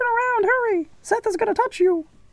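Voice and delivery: very high, weird, cartoonish, silly put-on voice. Speaking to listeners on YouTube in a strange put-on voice. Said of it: "I don't know what that voice was".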